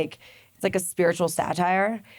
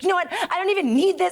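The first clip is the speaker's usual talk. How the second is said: acted-out, very high, shrill, furious screaming; 12 semitones higher than usual. Retelling a life coach's outburst on a Zoom call: imitating someone screaming. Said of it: "screaming at me".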